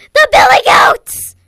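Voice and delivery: very high, very loud terrified troll scream, full volume.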